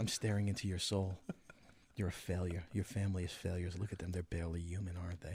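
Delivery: very deep, very soft, hushed, soothing calm voice. Speaking as the dead goat head staring at the listener, in a calm, soothing voice. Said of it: "it has a night has a calm, soothing voice".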